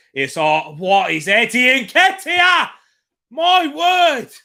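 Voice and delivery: very high, very loud screaming, climbing in pitch. Commentating on a match as the ball goes in, shouting. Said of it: "Sorry for shouting".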